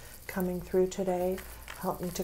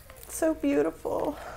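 tearful crying, higher pitch; 8 semitones higher than usual. Reading cards for a couple coming together; crying. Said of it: "Sorry I'm crying".

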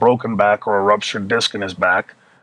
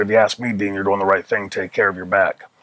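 put-on whispering. Retelling what a colleague said in the hall: retelling a whisper. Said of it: "he whispered to me".

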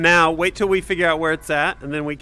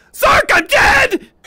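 mock piercing, shrill, loud, very high shriek; 6 dB louder than usual. Retelling a teammate's panicked call during the last map: imitating a scream. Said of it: "and then A P L just screams".

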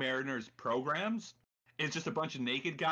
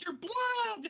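high cartoony voice, much higher. Describing a thing that gets mad and tries to kill you, imitating it: high-pitched cartoony voice. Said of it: "it's like got the high-pitched cartoony voice".

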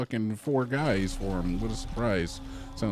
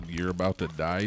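ordinary delivery

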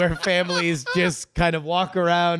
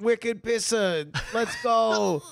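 put-on Boston accent; 4 semitones higher than usual. Joking in a group conversation, a speaker shows off a Boston accent. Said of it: "This is a Boston accent".

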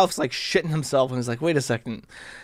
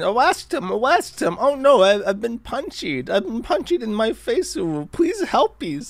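mock frantic, panicked, high-pitched screaming; 8 semitones higher than usual. Retelling a punched man running around, imitating someone screaming for help. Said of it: "is running around screaming".

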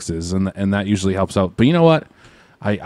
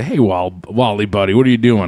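ordinary delivery

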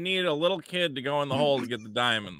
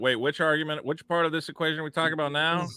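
ordinary talk

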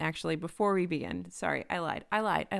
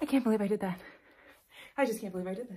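short of breath, winded; 3 semitones higher than usual. Celebrating finishing 50 books, speaking while out of breath. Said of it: "I'm also out of breath".

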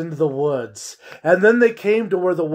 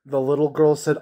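plain

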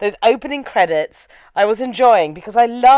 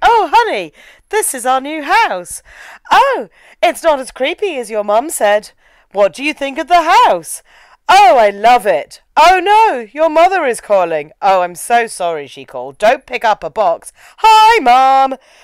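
mock bad, wooden acting delivery; 3 semitones higher, 3 dB louder than usual. Retelling the dialogue of a couple moving into a new house: mocking bad movie acting. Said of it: "You can't act".

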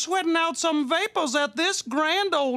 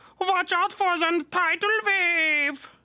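put-on slow German accent, wave drawn out. Joking about learning German from dubbed Baywatch, a put-on German accent. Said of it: "you did an accent and said watch out for".

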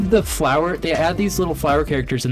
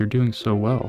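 put-on unsettling figure voice, much lower pitch; 6 semitones lower than usual. Imitating an uncomfortable figure grabbing your shoulder from behind, imitating an uncomfortable figure. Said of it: "an uncomfortable figure is coming up behind you".

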